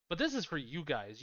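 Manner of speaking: plain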